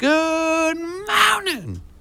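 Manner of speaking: host-style presenter delivery. Showing a guest how to say a good morning: the host's signature good morning. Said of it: "like a good [name] good morning".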